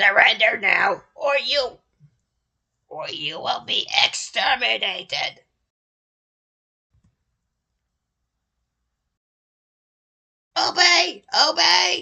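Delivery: very high, blaring, loud blasting delivery. Tempted to read a passage aloud like a Dalek: Dalek voice. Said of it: "read this like a Dalek".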